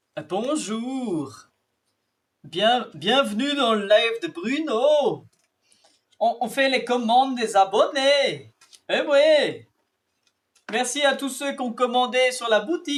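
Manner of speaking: mock Swiss French accent. Packing viewers' orders on a live stream at a viewer's request, put-on Swiss accent. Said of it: "Comment c'est le suisse déjà?".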